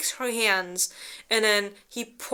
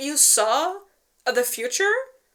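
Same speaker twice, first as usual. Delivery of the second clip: mock baffled, unsure, confused, puzzled tone; 3 semitones higher than usual. Retelling a story, voicing a character's question: retelling a confused question. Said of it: "She's, like, confused".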